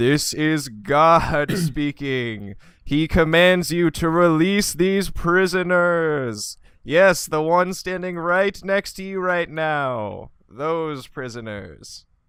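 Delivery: very loud, high, disguised, commanding booming voice. A player telepathically speaks to a half-orc to free prisoners, disguised voice as God. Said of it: "try and disguise my voice and go".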